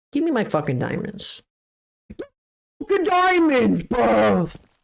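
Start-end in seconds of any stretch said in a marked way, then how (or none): 2.8-4.4 sudden slip into a British accent, pitched up. Reacting to getting diamonds in a game, with an accidental british accent. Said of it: "I turned British".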